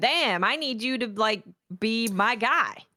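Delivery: super excited, overjoyed, drawn out. Retelling how Oryx reacts to the player in the game: imitating Oryx super excited. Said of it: "super excited".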